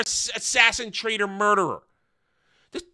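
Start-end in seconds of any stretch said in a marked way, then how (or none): none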